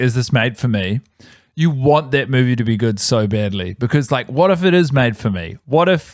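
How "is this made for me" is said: normal talking voice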